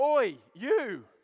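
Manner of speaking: very loud, high-pitched shout. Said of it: "he shouted again".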